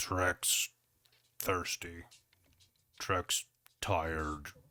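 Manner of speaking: big, low, deep second voice rumbling beneath. Describing what listeners will hear, the speaker does a second voice underneath. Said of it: "hear a second voice underneath that one that goes".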